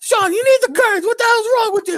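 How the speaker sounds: very high-pitched put-on Italian grandma voice. Imitating his italian grandmother talking to him, in an italian grandmother voice. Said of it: "the Italian grandmother".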